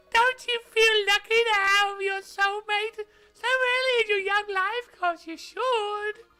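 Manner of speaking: bad, high put-on voice. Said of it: "I'm bad at high voices".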